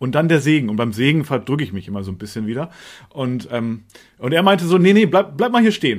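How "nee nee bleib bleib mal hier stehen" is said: very loud, raised, high-pitched call. Photographer retelling how he told her to stay during the blessing, very loud. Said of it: "Also so ganz laut".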